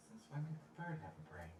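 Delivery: whisper. A narrator voices the patron speaking in the back of a player's head, whispering. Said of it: "a whisper similar to the voice".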